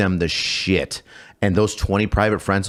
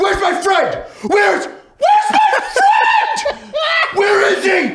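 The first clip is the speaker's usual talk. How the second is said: very high, loud, furious yell, acted out; 5 dB louder than usual. Telling a favorite story, acting out their past self freaking out, retelling an angry yell. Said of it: "And I freak and I freak out".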